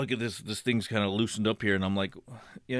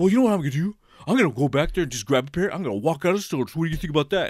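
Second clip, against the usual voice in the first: acted, worked-up, upset complaining voice, raised and pitched up; 6 semitones higher, 6 dB louder than usual. Retelling what he said at the store, imitating him all upset. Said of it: "he's like all upset".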